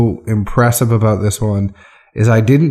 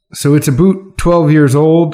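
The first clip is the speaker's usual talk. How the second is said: fake, pitched-up Canadian accent; 5 semitones higher than usual. Describing a rye whiskey's proof and age, put-on Canadian accent. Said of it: "I'm doing my Canadian accent".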